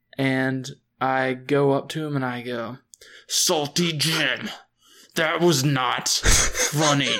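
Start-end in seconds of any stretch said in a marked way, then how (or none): 3.3-7.2 enraged, seething barbarian warrior voice. Confronting an old pirate after a prank: enraged barbarian voice. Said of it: "I go into a rage".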